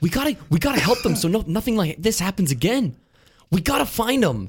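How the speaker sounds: very high-pitched, slightly past normal volume. Imitating an actor from movie trailers: Mark Wahlberg impression, a little too loud. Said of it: "he's not yelling, he's just a little too loud".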